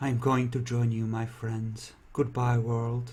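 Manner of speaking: muttering quietly under the breath. Voicing a character whom a player overhears, muttering under his breath. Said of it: "you hear him muttering under his breath".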